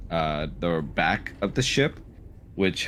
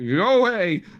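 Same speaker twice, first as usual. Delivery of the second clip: rather frightened, very high call; 11 semitones higher, 5 dB louder than usual. Narrating a game, a voice calls out after a knock on the door, rather scared. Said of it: "you hear a rather scared voice call out".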